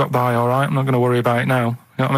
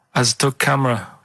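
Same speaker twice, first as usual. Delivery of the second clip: put-on German accent, man's voice. Explaining a joke by saying the punchline as the German fella would: put-on German accent. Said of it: "'Cause the way he'd say it, he'd be like".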